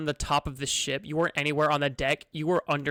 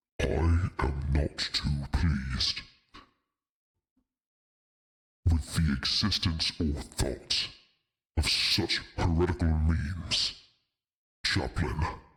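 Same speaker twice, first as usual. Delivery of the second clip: much deeper, low, very deep voice; 11 semitones lower than usual. Narrator voices an unseen speaker heard as the party leaves: much deeper voice. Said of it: "A much, much deeper voice".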